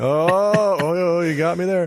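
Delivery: slow, bored voice with forced fake enthusiasm. Doing an impression of someone bored on a best friend's roller coaster, faking excitement. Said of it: "an impression of someone who's bored on a roller coaster".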